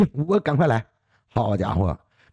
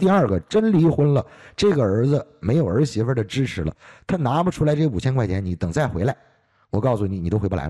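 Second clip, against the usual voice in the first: ordinary talk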